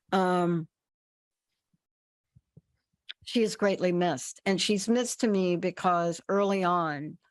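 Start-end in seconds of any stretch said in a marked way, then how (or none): 0.1-4.4 choked-up voice catching with emotion. Speaking about the loss of a doctor who stays in their heart, choking up. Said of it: "I'm choking up".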